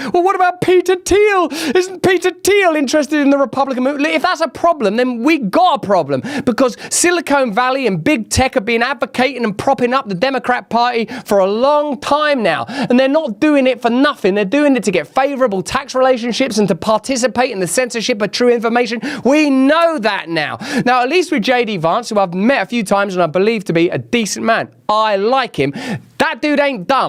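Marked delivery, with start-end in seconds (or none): 0.1-4.1 high, smug liberal intellectual voice. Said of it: "the kind of liberal intellectual class that will say".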